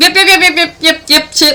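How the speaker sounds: high, loud, mocking yep-yep chatter. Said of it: "You're like".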